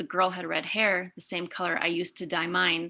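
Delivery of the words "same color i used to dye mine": normal talking voice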